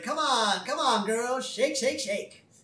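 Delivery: over-the-top, high-pitched put-on voice, cheering. Retelling a scene with a robot Richard Simmons: Richard Simmons impression. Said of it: "And so Simmons is like".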